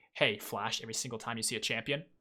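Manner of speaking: plain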